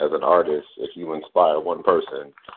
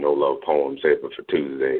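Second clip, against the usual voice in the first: normal talking voice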